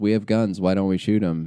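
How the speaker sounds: normal talking voice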